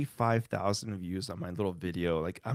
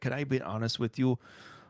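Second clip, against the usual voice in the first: put-on Polish accent in English; 3 semitones higher than usual. Retelling own past way of speaking, in a Polish accent. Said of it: "I used to have an accent, like".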